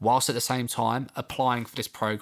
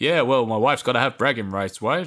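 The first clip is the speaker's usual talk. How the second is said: mock-charismatic delivery, louder; 6 dB louder than usual. Retelling how a man answered a question about his wife, imitating a charismatic answer. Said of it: "very charismatically".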